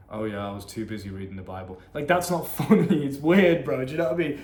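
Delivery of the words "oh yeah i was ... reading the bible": dull, flat, mundane monotone. Showing how not to talk in a conversation, mock-flat, mundane delivery. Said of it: "You can't be like weird and mundane with it".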